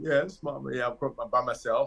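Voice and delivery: choked out through tears, crying. Retelling answering the mother on the phone from a bathroom stall: retelling own past crying. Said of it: "I'm crying and".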